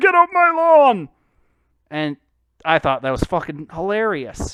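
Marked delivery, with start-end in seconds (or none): 0.0-1.1 very high, very loud, shrill put-on old geezer voice. Showing a voice the speaker used to do: a put-on old man voice. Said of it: "I would also do an old man voice like".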